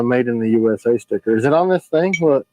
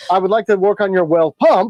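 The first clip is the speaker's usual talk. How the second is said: put-on weird Alaskan English inflection; 5 semitones higher than usual. Speaker imitates how a man he met talks: weird Alaskan English inflection. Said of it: "He has the weirdest inflection... that's not English. Alaskan English is weird English".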